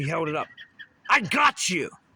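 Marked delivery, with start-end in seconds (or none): 1.1-1.9 high, cartoonish little kid voice. Retelling a man holding up a camera phone, in a cartoonish little-kid voice. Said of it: "this guy talked like a cartoon, like a little kid".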